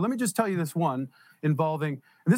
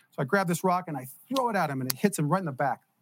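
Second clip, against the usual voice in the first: ordinary talk, nothing marked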